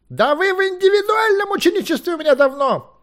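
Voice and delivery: very high, shrill, loud yell. Merlin to Levelis, who begs for individual apprenticeship: yelling. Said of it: "завопил Мерлин".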